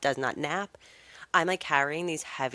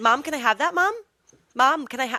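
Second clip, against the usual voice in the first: put-on little girl voice, higher and louder; 9 semitones higher, 7 dB louder than usual. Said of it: "her little voice".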